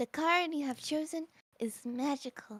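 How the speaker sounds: flat, unexpressive, deadpan voice. Voicing a character who asks someone to pick a card: flat unexpressive character voice. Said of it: "I don't like the voice I'm giving her".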